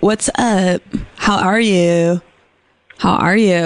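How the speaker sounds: imitated Valley boy voice. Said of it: "it kinda sounds like a Valley Boy".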